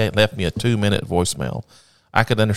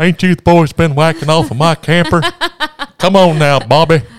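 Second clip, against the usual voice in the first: very loud, high, swooping, belted character voice; 9 semitones higher, 10 dB louder than usual. Told that you can do a great one, show it off to the other speaker: Hank Hill voice. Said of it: "you can do a great Hank Hill".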